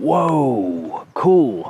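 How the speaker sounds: high, impressed, first word stretched, voice going up. Retelling how the speaker's wife reacted on seeing it: imitating his wife's reaction. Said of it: "That's not a very good impression of her".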